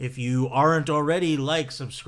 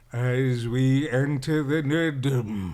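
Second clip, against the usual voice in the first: slow, eerie, put-on spooky haunted-house voice. Introducing the nerddom in a put-on spooky voice. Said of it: "spooky voice".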